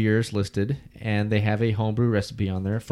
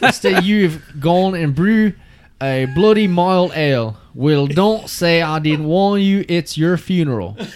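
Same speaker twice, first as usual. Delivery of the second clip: very loud, high, bad put-on Scottish accent; 8 semitones higher, 8 dB louder than usual. Reading a character's warning aloud while others judge the accent, failed Scottish accent. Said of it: "you have to read it in that voice".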